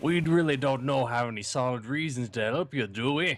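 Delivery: put-on pirate voice. Voicing a game character on a co-player's request: Juliet in a pirate voice. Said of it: "pirate voice?".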